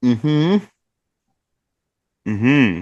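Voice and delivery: speaking with mouth full. Voicing a character answering through a mouthful of melon: mouth full of melon. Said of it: "with a mouthful of melon".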